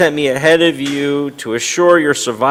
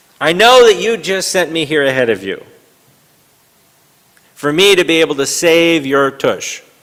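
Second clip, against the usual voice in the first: put-on sarcastic biblical figure voice; 2 semitones higher than usual. Showing how the Joseph line could be read: imitating Joseph sarcastically. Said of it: "We could read this a little bit, um, sarcastically".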